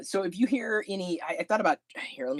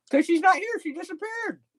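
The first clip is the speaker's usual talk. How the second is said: very high voice, talking with mouth full; 12 semitones higher than usual. Chatting between calls while eating dinner, talking with food in mouth. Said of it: "If it sounds like I have food in my mouth, right now I do".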